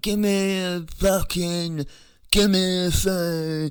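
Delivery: loud, very high, very slow slurred speech. Retelling a woman demanding a phone, imitating slurred speech. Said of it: "she's like slurring her words".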